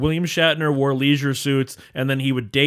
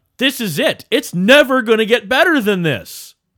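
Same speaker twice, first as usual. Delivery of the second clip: mock declaiming voice, high and loud. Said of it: "they thought".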